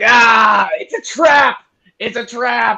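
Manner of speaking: very high-pitched shouted cry, in character. Player in a tabletop game, just hit by a trap, gives an in-character shout. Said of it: "I'm gonna shout".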